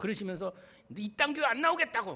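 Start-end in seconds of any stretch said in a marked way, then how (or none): 1.0-2.2 loud, high angry shout. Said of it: "막 소리를 지르고".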